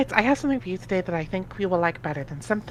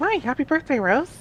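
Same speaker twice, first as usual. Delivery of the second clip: put-on girly voice jumping up two octaves; 7 semitones higher than usual. The speaker voices Jade opposite a partner voicing Rose, high-pitched girl voice. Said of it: "use my high pitched girl voice".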